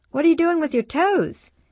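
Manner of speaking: very high, loud, rising, said through laughter. [name] sits down on the floor by a giggling Nathan and asks him, laughing.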